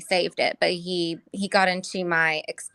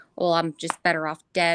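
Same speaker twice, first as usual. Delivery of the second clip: mock level, uninflected monotone voice; 2 semitones lower than usual. Retelling the responses he keeps giving: monotone voice. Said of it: "I hate to say that in such a monotone voice".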